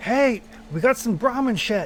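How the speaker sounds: acted-out high, drawn-out yell. Voicing a character heard through a closed door: yelling from behind a closed door. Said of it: "you hear him yelling".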